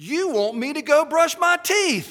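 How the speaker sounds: shrill, very high, very loud triumphant cry. Martin asks Jimmy a question, triumphant. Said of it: "he said triumphantly".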